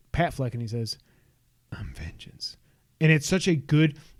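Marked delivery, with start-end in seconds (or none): 1.7-2.5 very quiet, breathy whispered superhero voice, barely audible. Recounting a movie trailer, quoting the hero's line in a Batman voice. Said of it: "in his Batman voice".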